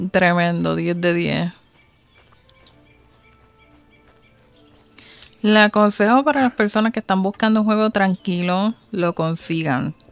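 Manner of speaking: tongue-in-cheek, sarcastic, mock glowing tone. After dying in the game and losing the inventory, sarcastic praise. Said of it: "Y estoy siendo sarcástica".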